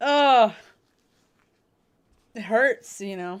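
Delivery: very loud, choked-up, near-tearful outburst. Speaker admits having a moment about a personal change, trying not to cry. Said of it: "I'm trying not to cry about it right now".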